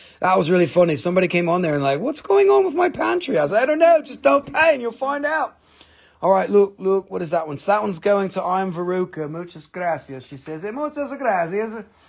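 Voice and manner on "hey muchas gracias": Spanish words spoken in a put-on Italian accent. Speaker repeating a Spanish thank-you while mixing up languages, Italian accent. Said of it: "I always try to go and do the Italiano accent".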